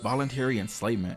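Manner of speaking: usual speaking voice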